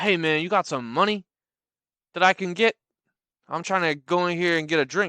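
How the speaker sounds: put-on pushy, aggressive tone. Retelling a stranger who crouched down to ask the speaker for money, mock-aggressive ask. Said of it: "Really aggressive for the ask".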